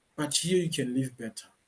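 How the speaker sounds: normal talking voice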